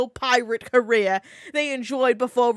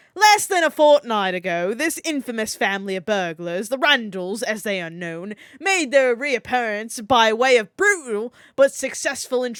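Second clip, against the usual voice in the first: fake British accent, slow and put-on. Reading a passage aloud for someone, in a put-on British accent. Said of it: "Let me do my best British accent for reading this".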